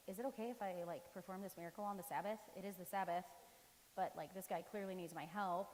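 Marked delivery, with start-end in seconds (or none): none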